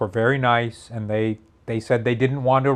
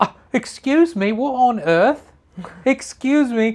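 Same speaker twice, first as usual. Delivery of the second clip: bad fake Australian accent, very high, angry; 12 semitones higher than usual. Describing someone super pissed in Australia, the speaker imitates her in a bad Australian accent. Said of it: "I can't really do an Australian accent".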